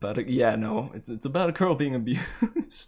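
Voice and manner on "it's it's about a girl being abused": nervous laughter through the words. Explaining what a musical adaptation is about, with nervous laughter. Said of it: "I'm kind of laughing like out of nerves".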